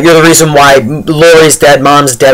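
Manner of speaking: plain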